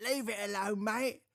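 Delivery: put-on very high British twang. Describing how someone's son has picked up an accent, put-on British twang. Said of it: "She's got a British twang now".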